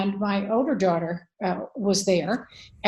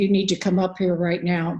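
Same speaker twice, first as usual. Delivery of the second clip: heavy, very somber, grave official tone. Retelling a phone call from the school, imitating a very somber voice. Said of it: "Very somber voice".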